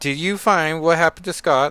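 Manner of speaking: put-on British accent. Retelling a scene where Kate catches up with Hazel, put-on British accent. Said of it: "That's my British accent".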